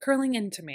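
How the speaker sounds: plain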